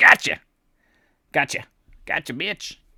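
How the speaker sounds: animated comedian voice, wide swooping pitch, bouncy. You voice the market makers catching a buyer, as a Dave Chappelle impression. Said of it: "Think of like, you know, Dave Chappelle".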